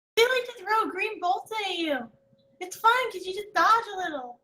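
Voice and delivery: quick, birdlike creature voice. Speaking as a bird familiar, answering a companion's question, bird familiar voice. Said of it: "[name] kind of turns his head like side to side like birds do and goes, / [name] kind of turns his head like side to side like birds do and goes".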